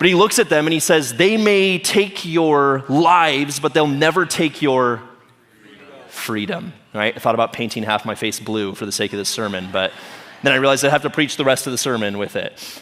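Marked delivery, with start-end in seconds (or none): 1.1-6.7 put-on poor, very slow Scottish accent. Preaching a sermon, quoting a man's speech to the Sons of Scotland, in a bad Scottish accent. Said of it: "I have the worst Scottish accent".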